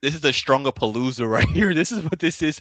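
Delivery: words broken by laughter. Talking about a wrestling match while laughing, laughing while talking. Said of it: "I keep laughing".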